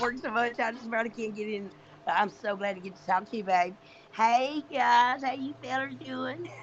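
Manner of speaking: natural Kentucky accent. Greeting others on a call: Kentucky accent. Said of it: "I love that accent".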